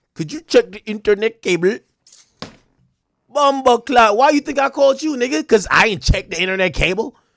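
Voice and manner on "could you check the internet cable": rote, scripted call-centre agent reading voice. Mocking a call center agent reading a script: imitating a call center agent. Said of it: "They just reading scripts".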